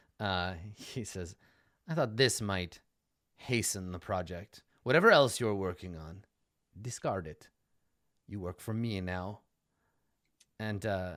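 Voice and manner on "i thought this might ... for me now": deep, rich, moneyed gentleman's voice. Voicing the noble who pays for a rush job: Victorio's deep rich man's voice. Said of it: "a deep, uh, rich man's voice".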